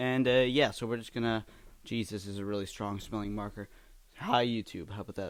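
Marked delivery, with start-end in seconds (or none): 4.2-5.3 voice cracks partway through. Greeting youtube while drawing with a marker, voice cracking. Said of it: "my voice cracked".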